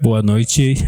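low thick voice. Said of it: "Ui, que grosso".

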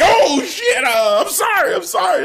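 acted scared, backing-down tone. Retelling Paul Heyman apologizing in the back: imitating a terrified Paul Heyman. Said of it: "he was terrified".

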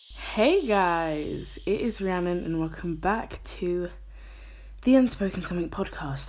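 out of breath. Podcast host opening the episode after running up the stairs, out of breath. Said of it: "i always sound so out of breath when i start these".

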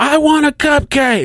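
put-on very high, shrill, drawn-out, demanding child scream. Retelling how a misbehaving kid acted: imitating a kid screaming. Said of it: "I mean, just screaming".

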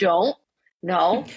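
tone like talking to a dog. Speaker acts out what she tells her dog when getting a treat, like commanding a dog. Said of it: "it's like me telling the dog to sit".

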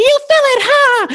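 very high, drawn-out, stretched cartoon voice. Retelling how a brother's voice sounded during a trip: Doom cartoon voice. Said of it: "he sounded like Roger Rabbit when Doom was like".

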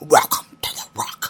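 awful, badly done put-on Scottish accent. Asked by a friend to do it one more time, the speaker gives a Sean Connery accent. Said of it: "my perfect Sean Connery accent".

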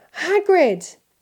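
relieved croak. Harry, lost, sees hagrid striding towards them and croaks in relief. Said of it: "Harry croaked in relief".

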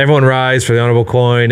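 ordinary delivery

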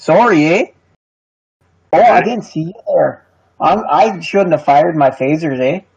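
put-on high Canadian accent, with eh. Joking about a Canadian Star Trek, doing a Canadian accent. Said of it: "everybody what talks with a Canadian with a eh?".

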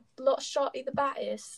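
put-on British accent. Repeating a line they are discussing with another speaker, in a british accent. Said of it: "that's really fun to say in a British accent".

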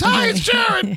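put-on very high, thin-sounding voice. Retelling recognizing a phone caller: high voice imitating Jared. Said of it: "for that high voice".

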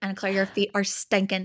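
attempted, put-on Irish accent. Imitating an Irish man's phrase in an Irish accent. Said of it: "I really hope that was a good accent".

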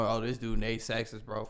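ordinary delivery

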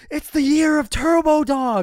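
very loud, very high, drawn-out yell. Retelling a brother running out holding a beer up: imitating brother yelling. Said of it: "and just yells".

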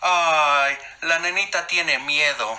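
very slow, high, mocking taunt with "Ay" drawn out. [name] cuts in on carolina's friend from across the door, mocking. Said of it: "se burló [name]".

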